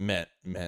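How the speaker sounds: heavy stress on men, said twice. Finishing a remark on comedy, Joe Rogan-style stress on MEN. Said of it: "Did I emphasize men?".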